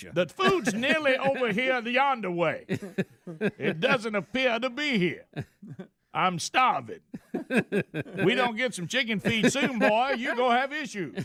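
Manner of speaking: very high-pitched cartoonish voice. Voicing a hungry cartoon rooster wanting chicken feed: Foghorn Leghorn voice. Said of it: "Same voice".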